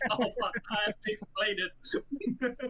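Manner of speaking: put-on mortified cringe, high and slow. Retelling a classmate's words after nobody knew a slang word: imitating someone super embarrassed. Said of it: "super embarrassed, being like".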